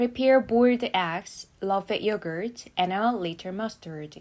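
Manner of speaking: list tune: eggs and yogurt rise, mustard falls. Teaching a three-noun list for the test: first two items rise, last falls. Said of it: "앞에 두 가지는 억양 올려주시고요. 마지막에 억양이 내려갑니다".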